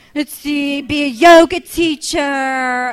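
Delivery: silly put-on voice. Answering a question about other aspirations, in a stupid voice. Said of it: "then why would you do a stupid voice for that?".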